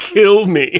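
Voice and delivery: high-pitched, begging, pleading voice. Imagining RoboCop patrolling the streets: imitating pleading RoboCop, mock pleading. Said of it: "pleading, pleading with people to end his existence".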